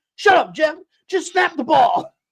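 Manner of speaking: heated arguing retort. Retelling a hot mic argument with Jeff Saturday: imitating Peyton Manning arguing. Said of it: "when him and Jeff Saturday were arguing".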